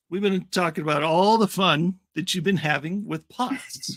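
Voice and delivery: lightly sarcastic, a little wry and ironic. Asking a guest about a hard illness with a joke: sarcastic. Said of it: "being a little sarcastic there".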